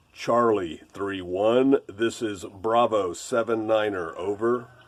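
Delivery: measured, slow, low radio-style talk. Explaining how to talk on military radio, demonstrating a call: slow and low radio voice. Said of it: "talk slow and low".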